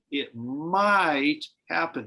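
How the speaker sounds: might stressed and drawn out slowly. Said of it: "I stress the word might".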